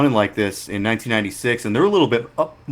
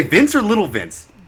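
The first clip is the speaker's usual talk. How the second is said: ordinary delivery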